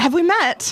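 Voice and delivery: put-on British accent, pitched high. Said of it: "a familiar British voice".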